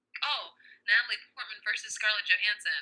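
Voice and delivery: ordinary talk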